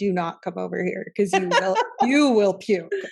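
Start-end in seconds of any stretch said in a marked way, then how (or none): none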